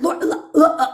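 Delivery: weeping, breaking into sobs. Imitating the other speaker finding a favorite piece, imitating Amber sobbing. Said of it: "Tears coming down the side of her eyes".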